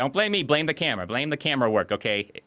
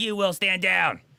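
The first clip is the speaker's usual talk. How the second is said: mock yelling, high-pitched and forceful; 7 semitones higher than usual. Retelling a movie scene where an officer starts yelling: Ed Harris yelling impression. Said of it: "does the Ed Harris thing and just starts yelling".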